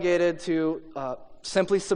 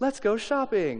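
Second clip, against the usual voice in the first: sweet little voice, quieter; 3 semitones higher, 6 dB quieter than usual. Retelling what a boy's new G.I. Joe toy says: sweet little voice. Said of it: "say in a sweet little voice".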